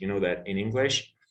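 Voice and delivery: ordinary talk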